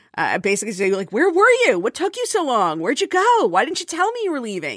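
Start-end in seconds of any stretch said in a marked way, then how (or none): 1.1-4.7 mock yelling, very high, sing-song and swooping. Retelling how the cat waited at the door after a short trip: imitating Clayton yelling. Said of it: "yelling at me the, the way that he frequently yells at me".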